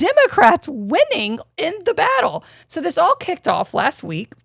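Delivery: getting excited, with a high, excited lift.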